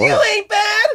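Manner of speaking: shrill, very high, loud tough-guy yell. Retelling a music video scene where Wesley Snipes yells: imitating Wesley Snipes yelling. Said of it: "jacked up Wesley Snipes yelling".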